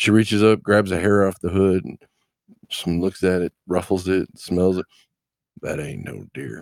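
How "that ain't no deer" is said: whispered, hushed, breathy woman's voice. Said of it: "I can't do her voice 'cause my voice doesn't go deep enough".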